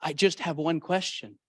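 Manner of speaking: faint, barely-there, very weak, feeble voice. Retelling a dying man's question during a visit: imitating a very weak voice. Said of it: "in a very weak voice".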